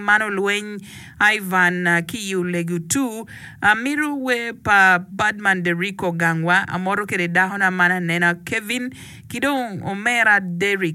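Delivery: ordinary talk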